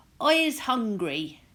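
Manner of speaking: big, resounding, booming giant voice. A narrator reading a giant's line in a story, booming giant voice. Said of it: "the giant boomed".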